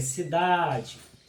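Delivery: emphasized stressed syllable of the word cidade. Explaining rhyme and stressed syllables, emphasized stressed syllable in cidade. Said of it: "Então eu estou pronunciando, frisando a tônica".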